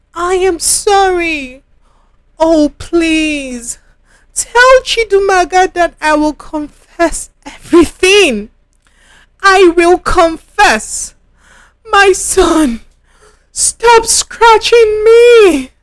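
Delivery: writhing, agonized outpouring, high and pained. Confessing after a mother accuses her of betrayal, writhing in pain. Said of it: "[name]'s voice carried down the corridor. / She writhed in pain, / I didn't want to put the accident substance in your food".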